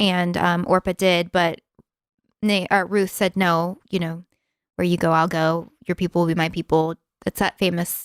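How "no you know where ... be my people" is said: ordinary talk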